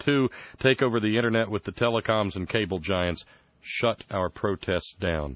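ordinary talk

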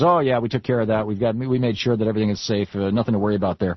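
normal talking voice

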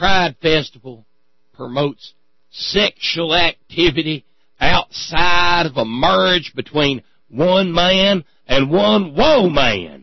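exaggerated rural drawl. Quoting a statement about the Pride Festival, in a stupid put-on cornpone voice. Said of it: "I'm down into the stupid cornpone-ass voice".

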